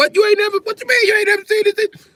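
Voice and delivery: shrill, very high, loud screaming outburst. Acting out someone's reaction to an unfamiliar seasoning: imitating someone screaming. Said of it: "they will stop screaming".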